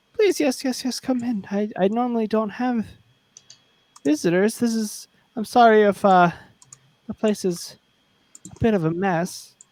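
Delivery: timid, weak, small frail voice, pitched high. A game narrator voices the lair's occupant inviting visitors in: small, frail, quiet voice. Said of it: "a small, quiet, frail sounding voice".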